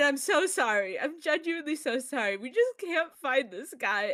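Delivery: voice on the verge of tears, about to break. Playing a character in a tabletop game, on the verge of tears. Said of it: "I'm gonna cry a little bit".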